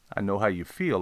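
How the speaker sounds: ordinary delivery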